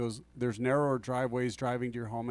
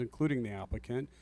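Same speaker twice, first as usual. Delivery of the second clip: ordinary talk, nothing marked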